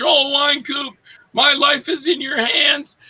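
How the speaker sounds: slow, stretched, high, drawn-out pleading scream. Retelling a stunt racing a Winnebago, a passenger screaming: imitating Debbie Rochon screaming. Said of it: "Debbie Rochon was screaming like".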